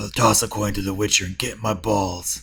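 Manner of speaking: gruff, dead flat, one-note monotone. Two speakers discussing gruff voices; one tries a gruff monotone Witcher voice. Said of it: "So you can voice a Witcher".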